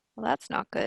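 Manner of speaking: soft whisper, under the breath. Whispering down to a companion in character: whispering. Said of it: "whisper down to her".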